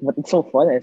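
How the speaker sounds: usual speaking voice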